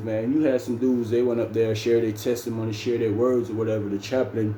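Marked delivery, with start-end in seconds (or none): none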